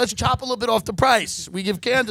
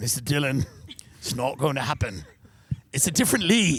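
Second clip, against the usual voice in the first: glum, sad, very low-pitched British man's voice; 9 semitones lower than usual. Retelling what the car dealer said to the speaker: imitating a sad british guy. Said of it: "This sad little British guy is like".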